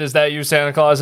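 ordinary talk

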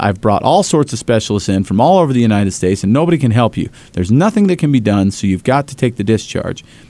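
ordinary delivery

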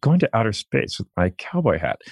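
comic frog-puppet style cartoon voice. Doing an impression of Jeff Bezos after being asked for one: Jeff Bezos impression. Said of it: "Doesn't he talk like, sort of like this?".

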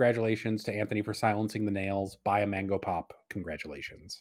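ordinary talk

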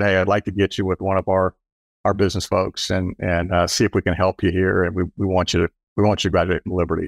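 ordinary delivery

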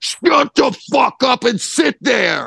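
very high, authoritative, commanding scream. In the car, as someone tries to get out and is held back, imitating John Doe's authoritative scream. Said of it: "screamed this John Doe authority".

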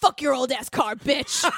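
very deep, low, possessed-sounding demonic voice. Retelling a boy's line from a reenactment, super low demon voice. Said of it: "in a super low demon voice going".

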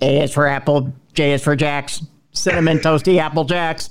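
robotic, computer-like voice. Talking about a speaking spell, doing a Stephen Hawking voice. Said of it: "I always used to do this voice with Stephen Hawking".

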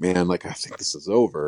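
ordinary talk

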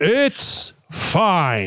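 swooping, high fight announcer call. Answering a question with a put-on voice: imitating a Buffer brother. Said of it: "That's my favorite voice you've done".

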